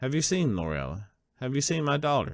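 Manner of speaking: hopeful, daring tone with pitch rising up. Voicing a father asking about his lost daughter: hopeful. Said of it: "he allows himself to be hopeful".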